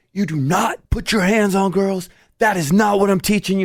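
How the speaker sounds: mock, high-pitched, furious, out-of-control yelling. Recounting yelling at a boy who hurt his little sister, retelling own yelling. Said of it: "I yelled at him".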